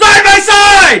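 shrill, very loud, high-pitched yell. Stepping back from the mic to spare ears, shouted very loudly. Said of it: "I'm going to go back here from the mic here just so I don't blow everyone's ears out".

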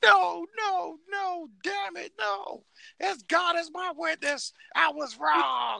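very high, slow, creaky, rough outcry. Mocking the loser with an impression: Jim Ross impression. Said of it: "you need to do a Jim Ross impersonation".

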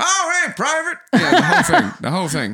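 put-on American accent. Voicing the cat as a general, the speaker addresses a private in an American accent. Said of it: "Why is he American now?".

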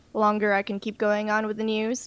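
plain

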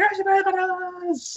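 very high, slow cartoon villain cry.

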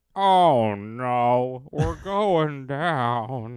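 put-on old Alabama giraffe voice, Southern accent, drawn-out "no". Joking about how giraffes die of old age, doing an old alabama giraffe voice. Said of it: "That's my impression of a giraffe".

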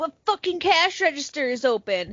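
angry, restrained half-yell. Retelling how a man yelled in the store for an open register: retelling a yell. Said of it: "he yells in the store".

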